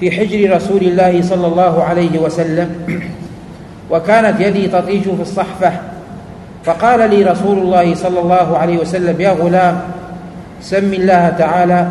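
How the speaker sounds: plain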